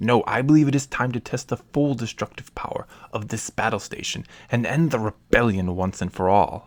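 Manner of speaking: ordinary talk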